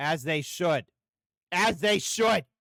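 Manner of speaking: very loud outburst of a yell, rising in pitch. Interjecting while the other speaker explains Rome's history, yelling. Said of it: "I didn't mean to yell".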